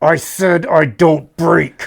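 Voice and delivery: slow words forced out through clenched teeth. Retelling what a guy repeated to another guy, imitating gritted-teeth speech. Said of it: "this guy grits his teeth and says".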